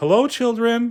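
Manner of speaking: sugary sweet, very high voice. Reading a story aloud, narrator voices a returning character greeting the children: Miss Nelson's sweet voice. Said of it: "said someone in a sweet voice".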